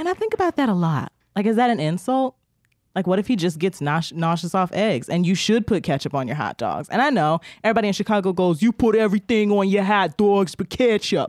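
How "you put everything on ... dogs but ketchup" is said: put-on New York accent. The speaker mimics what everyone in chicago says about hot dogs, new york accent. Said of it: "That was a New York accent".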